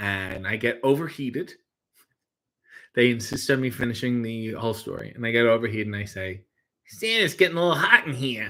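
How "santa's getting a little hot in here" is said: put-on 1920s old-movie street tough kid voice. Retelling a line said while overheated in a Santa costume: 1920s street tough kid voice. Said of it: "that's how I sounded, like I was from".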